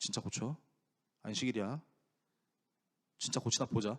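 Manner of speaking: mock, disdainful, low, scornful muttering. A preacher retells the healing story, imitating the Pharisees watching Jesus. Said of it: "제가 좀 흉내를 내보자면 이러고 보고 있는 거예요".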